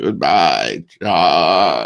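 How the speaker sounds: little alien creature voice, a name drawn out. Retelling what the E.T. figure said at the ride's end: E.T. voice. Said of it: "the one E T would go".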